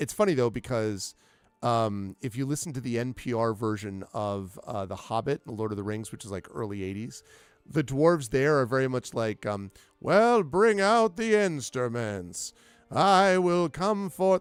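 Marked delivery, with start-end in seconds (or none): 10.0-14.4 put-on slightly wavery, high, drawn-out old-man voice. Speaker describes the dwarves in a radio Hobbit adaptation: wavery old man voice. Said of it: "slightly wavery old man voice".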